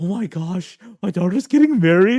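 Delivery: mock, put-on surprise. Retelling the father's reaction to the engagement: imitating put-on surprise. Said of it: "my dad acts so surprised".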